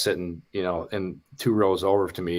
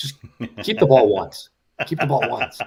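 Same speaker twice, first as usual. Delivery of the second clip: loud, high-pitched hollering yell; 7 semitones higher, 6 dB louder than usual. Fan recalling watching an Ohio State game, retelling screaming at TV. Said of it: "I'm screaming at my TV".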